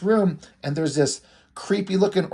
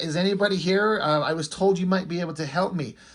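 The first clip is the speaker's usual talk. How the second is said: ordinary talk, nothing marked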